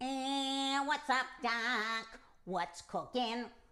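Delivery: put-on cartoon voice, one word drawn out. Asking whether there is a fake voice, copying a character: Bugs Bunny voice. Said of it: "I was copying Bugs Bunny. That was a character voice".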